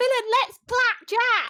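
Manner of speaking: high, slow, excited cry.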